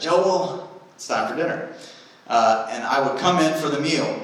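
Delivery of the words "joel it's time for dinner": put-on Southern accent, calling out loudly. Retelling how his mom called him in for dinner, in her southern accent. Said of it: "she would say in her southern accent".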